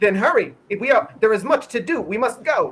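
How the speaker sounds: high, loud, projected creature voice. Asked whether Firefox responds, the storyteller voices the reply; Firefox voice. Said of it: "it heads off to the east".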